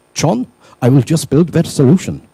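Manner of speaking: bad put-on German accent. Acting out a line said to john, in a terrible german accent. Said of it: "I'm going to do a terrible German accent".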